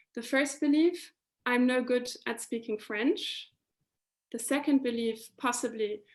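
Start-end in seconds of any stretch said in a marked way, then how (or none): none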